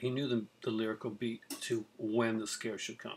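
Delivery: plain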